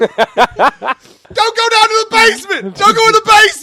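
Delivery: put-on voice, belted out high.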